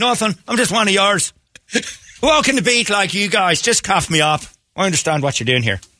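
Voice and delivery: put-on Irish accent, pitched very high. Improvising a bit about talking to police, going into an irish accent. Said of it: "What happened to your voice?".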